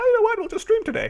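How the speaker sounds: voice shooting up, very high-pitched. Saying you might just randomly stream today, voice going very high. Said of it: "As my voice just went really, really high".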